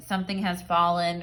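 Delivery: plain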